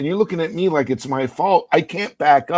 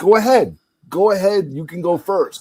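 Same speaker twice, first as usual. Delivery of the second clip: light, mild, play-acted called-out yell; 3 semitones higher than usual. Retelling yelling at a man in a wheelchair at a drive-through, retelling a yell. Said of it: "And I'm like yelling at him".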